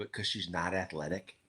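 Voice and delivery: very quiet, very low, hushed, confiding murmur. Talking about a girl in the family, lowering voice for one remark: quiet, hushed. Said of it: "I gotta say this quietly".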